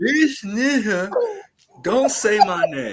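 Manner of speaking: high, slow, deliberate delivery. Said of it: "Say it how he said it".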